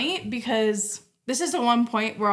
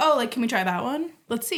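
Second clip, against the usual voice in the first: ordinary talk, nothing marked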